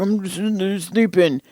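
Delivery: cranky, irritated, grumpy, put-out tone. Retelling a partner's reply after being woken at night: imitating someone grumpy. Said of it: "you kinda got all grumpy".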